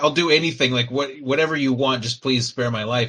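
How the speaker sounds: mock groveling, desperate, begging voice. Retelling a scene where a captured man begs the queen: imitating Pike begging for his life. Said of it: "he just basically just begs".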